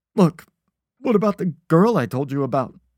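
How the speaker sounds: loud, high-pitched spluttering of the words. Reading a man held by the throat answering his captor, sputtering. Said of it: "he sputtered".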